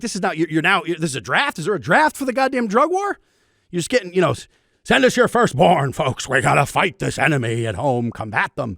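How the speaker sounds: put-on old man grumble. Mocking drug war rhetoric about a draft: Nixon voice. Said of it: "I just went into Nixon".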